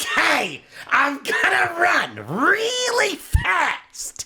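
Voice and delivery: very high, slow, dragged-out, swooping comic whine. Trying the voice again with eyes closed: Gilbert Gottfried voice. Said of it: "I'm gonna try it again".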